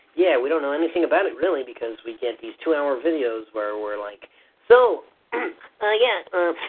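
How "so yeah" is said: nerdy voice, slightly higher pitch. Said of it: "your nerdy voice is just barely, barely higher than your actual voice".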